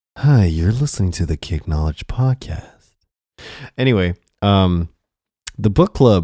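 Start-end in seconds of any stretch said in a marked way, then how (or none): 0.3-2.7 deep, bassy public-radio announcer voice. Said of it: "That's that Joe Rogan voice, that N P R".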